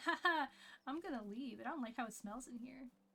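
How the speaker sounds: voice of a cat. Retelling what the cats seem to say, voicing the cats. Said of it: "they're like".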